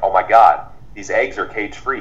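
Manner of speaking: usual speaking voice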